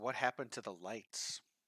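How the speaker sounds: hushed, quiet, half-whispered speech. Asking in character about the lights in the dark: quiet half-whisper. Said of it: "I quietly ask".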